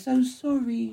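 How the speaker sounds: put-on soft, high, weird, childish little boy voice. Recounting a scene where a man apologizes, in a weird little boy voice. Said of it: "in his sort of like weird little boy voice".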